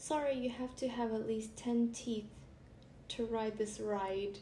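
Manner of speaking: ordinary talk, nothing marked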